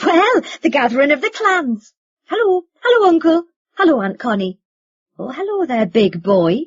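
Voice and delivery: high-pitched, giggly voice, laughing through the words. A woman bursts into the room and greets her family in a high-pitched, giggling voice. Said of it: "in a high-pitched, giggling voice".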